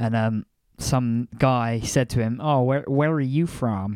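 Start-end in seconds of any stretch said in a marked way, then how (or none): 2.4-4.0 poor imitation of an American accent. Retelling a guy at a us airport asking a question: terrible american accent. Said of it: "My terrible American accent".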